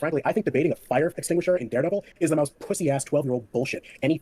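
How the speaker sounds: normal talking voice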